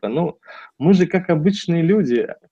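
falsely modest, self-effacing, lifted humble tone. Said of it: "пытаясь показаться скромным".

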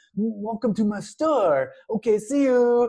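heavy put-on Korean accent. Describing an actor's goofball role, quoting him in a thick korean accent. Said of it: "he has a very thick Korean accent".

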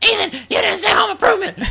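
very high-pitched, outraged screaming call. Imagining his family's reaction, the speaker imitates them: imitating family screaming. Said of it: "they're screaming out now".

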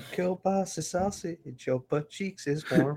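high, hushed, close half-whisper. Picturing the other speaker talking to her on the phone: imitating someone half-whispering. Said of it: "whispering to her".

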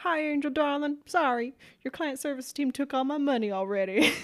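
put-on accent from the Carolinas. Retelling a phone call with a man from the Carolinas, in a Carolinas accent. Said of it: "just like that the best accent".

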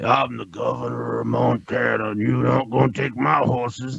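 raspy movie-star voice. Mocking an actor who keeps playing cowboys, doing a raspy Kevin Costner impression. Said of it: "you fucking raspy douchebag".

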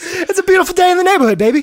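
very high, fast-talking, slick, smooth patter. Imagining another actor cast as Mr. Rogers, doing a fast-talking Vince Vaughn Mr. Rogers. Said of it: "This fast-talking, chain-smoking version of Mr".

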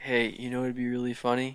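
quiet put-on whisper. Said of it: "he whispers in my ear".

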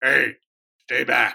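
loud gravelly bark. Recalling what his pitching coaches used to say, imitating a deep gravelly voice. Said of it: "it usually came in a deep, gravelly voice".

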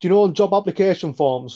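put-on thick, very strong Liverpool Scouse accent. Retelling what brother-in-law Brian said to the speaker, in a strong Scouse accent. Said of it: "he goes in a very strong Scouse accent".

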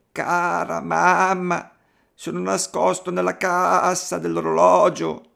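put-on small child's high, tiny voice crying out. Narrator reads the youngest kid calling his mother from hiding: tiny voice crying out. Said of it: "una vocina gridò".

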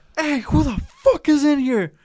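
mock very high, shrill, desperate scream. Retelling a guy screaming out of nowhere: imitating a desperate scream. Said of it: "he screams my, like, loud, like, desperation".

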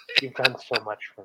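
put-on quiet voice. Retelling how the girlfriend thanked them after the movie: imitating a quiet thank-you. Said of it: "that kind of quiet".

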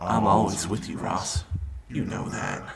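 soft, breathy, whispered demon voice. Speaker recapping a story, voicing demon Bob Ross. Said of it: "demon Bob Ross mode".

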